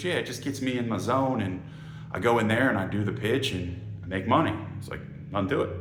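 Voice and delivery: ordinary talk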